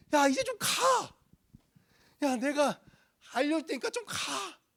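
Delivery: put-on exasperation. Imagining how God spoke in this passage, mock-impatient 'just go already'. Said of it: "좀 이제 좀 가라는 뉘앙스".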